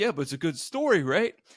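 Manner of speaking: dopey caveman voice. Mimicking the other speaker's reply during an argument, mocking dim-witted voice. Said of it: "have to do an impression of my voice like that. It makes me sound like an illiterate caveman".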